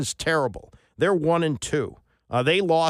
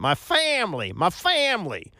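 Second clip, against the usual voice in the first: fake Southern accent, slow, swooping drawl; 4 semitones higher than usual. Mocking a football coach who puts on an accent: Brian Kelly's phony Southern accent.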